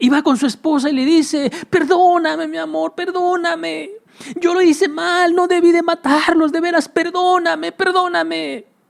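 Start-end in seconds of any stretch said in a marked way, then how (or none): 1.7-8.6 mock sobbing, high, tearful, begging, pleading voice. Acting out the father begging his wife's forgiveness: acting out crying while begging forgiveness. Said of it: "así llorando, llorando, llorando".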